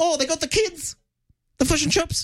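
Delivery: very high, soft mock Australian accent sounding Kiwi. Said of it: "Meryl Streep doing an Australian accent, which sounds more like a Kiwi accent".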